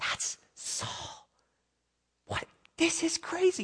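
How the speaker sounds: very slow, hushed whisper. Retelling soldiers seeing their enemy in a cave: imitating men whispering. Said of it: "Just whispering".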